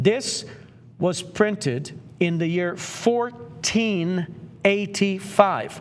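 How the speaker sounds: very slow, drawn-out, deliberate, word-by-word delivery. Telling listeners a printing date so they can digest its age, very slowly. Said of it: "I'm going to say it very slowly".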